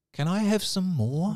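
small, timid, meek, high-pitched voice. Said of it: "in a very timid voice".

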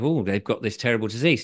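ordinary talk

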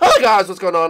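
loud cartoon voice with a voice crack. Voicing Bowser Jr. among lost companions, Bowser Jr. voice with crack. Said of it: "I just had a voice crack".

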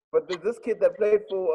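plain

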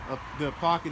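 plain

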